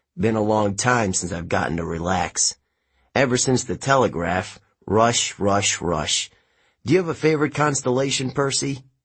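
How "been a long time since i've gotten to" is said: plain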